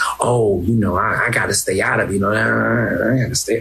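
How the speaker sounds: low, fast, rattled-off evasive mumble like an official.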